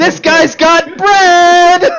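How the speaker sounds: shrill squeaking shout, very high and loud. Narrating a scene, the speaker voices a creature that squeaks to the others: squeaking really loud. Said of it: "He squeaks really loud".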